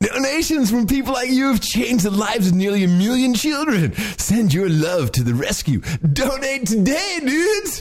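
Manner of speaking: very high-pitched surfer-stoner dude voice. Asked to read a donation ad as the stoner dude, stoner dude voice. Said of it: "do the stoner dude".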